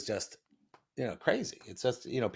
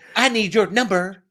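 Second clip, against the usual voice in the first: high, loud, slow yell. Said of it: "Do that again".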